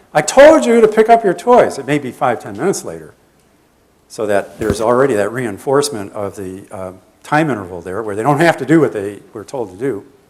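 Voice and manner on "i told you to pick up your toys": very high, shrill, loud parental yell. Acting out the parent repeating the demand: imitating a parent yelling again. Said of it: "Parent yells again".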